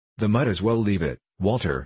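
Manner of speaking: ordinary talk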